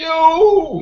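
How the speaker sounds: very high, stretched-out, loud, accusing yell. A player's character accuses the one who sent Eloren to his death, yelling out at him. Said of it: "And I'll yell out at him".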